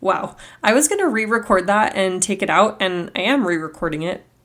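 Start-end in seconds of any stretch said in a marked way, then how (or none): none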